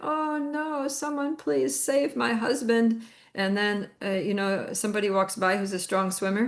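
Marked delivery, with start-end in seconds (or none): 0.0-3.0 mock desperate, tearful, slow, high crying. Telling a story about a woman whose husband is drowning; imitating someone crying. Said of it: "she's crying".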